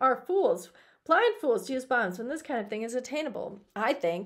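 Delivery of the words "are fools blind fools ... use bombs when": ordinary delivery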